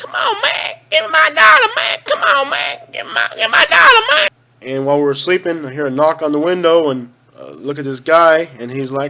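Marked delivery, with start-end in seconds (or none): 0.0-4.3 very high, sing-song, swooping pleading voice. Retelling meeting a man known from YouTube: imitating his plea for a dollar. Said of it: "the guy that's on YouTube that goes".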